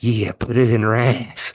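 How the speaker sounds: eerie, skin-crawling creepy voice, leaned in close. Retelling what a guy sitting behind muttered right in the ear: imitating a creepy mutter. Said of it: "up the creepy factor for you".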